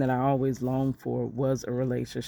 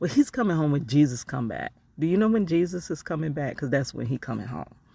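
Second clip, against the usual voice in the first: mock playful, flip, tongue-in-cheek sarcasm, swooping; 2 semitones higher than usual. Retelling own reply to the mother's repeated question: retelling a joking sarcastic reply. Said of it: "a jokingly funny way".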